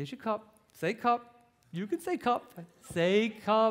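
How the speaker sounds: slow, patient, coaxing repetition. Acting out a parent urging a baby to speak: coaxing a baby to say a word. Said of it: "then you begin to demand it".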